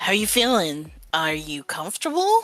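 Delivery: hushed, whispering voice. Leaning in close to ask another character how they feel: whispering. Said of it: "leans in close to, like, whisper".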